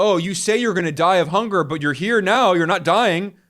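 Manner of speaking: plain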